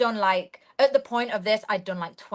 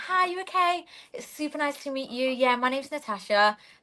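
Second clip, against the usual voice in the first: fake posh voice, pitched up; 6 semitones higher than usual. Speaker showing how she would sound on a phone call: put-on posh phone voice. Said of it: "I'm trying to be posh".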